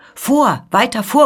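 loud, frantic, distraught cry, beside herself. A woman in a carriage calls out to the coachman, beside herself. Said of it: "ruft sie ganz außer sich dem Kutscher zu".

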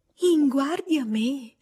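surprised, astonished outburst, caught off guard. Harriet reacting to being told she would have been warned, astonished exclamation. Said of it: "esclamò Harriet, arrossendo e cadendo dalle nuvole".

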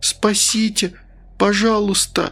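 begging, pleading in a high stage whisper. A stranger staring into a man's eyes, begging for help, half-whispered pleadingly. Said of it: "прошептала с мольбой".

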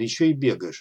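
ordinary delivery, nothing marked

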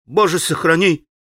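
crying out, exclaiming outburst. Alyosha responds to Ivan Fyodorovich's whispered remark, exclaiming. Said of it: "воскликнул Алеша".

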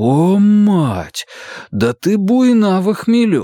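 bewildered, very slow. Narrator reading his own reply to a woman who was thrown out, bewildered. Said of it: "растерянно проговорил я".

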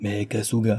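plain

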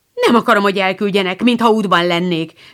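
snapped, offended. Told she will be sent away to an aunt's, she answers, snapped, offended. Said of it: "csattant fel Émi sértődötten".

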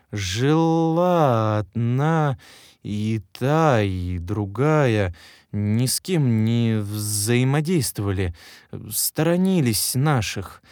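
slow drawl, words stretched, long silences between. The apartment owner answers the detective, speaking slowly, drawn-out, with long pauses. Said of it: "Хозяин квартиры говорил медленно, растягивая слова и делая длительные паузы".

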